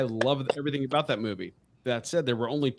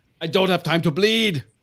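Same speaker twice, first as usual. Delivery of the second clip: belted out, high and loud; 6 semitones higher, 8 dB louder than usual. Doing an Arnold impression after others ask to hear it: Arnold Schwarzenegger impression. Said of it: "give the best Arnold impression".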